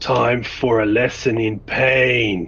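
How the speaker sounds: slow, booming bellow of a huge brute villain. Narrating a game as an unknown attacker shouts at the city, shouting villain voice. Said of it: "The enclave erupts in chaos and the sounds of distress as a large figure comes into view. Between the buildings, the massive spiked chain slams into the fleeing KL, knocking her to the ground and tear".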